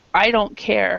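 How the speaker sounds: ordinary talk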